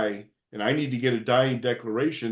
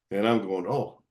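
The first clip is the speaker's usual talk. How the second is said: ordinary delivery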